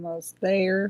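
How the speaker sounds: put-on American southern accent. Loading an animation while the other speaker waits: southern accent. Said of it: "your southern accent?".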